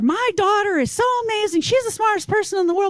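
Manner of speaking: put-on yelling. Retelling playing a parent at a patient's therapy session: imitating a yelling parent. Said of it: "start yelling at her".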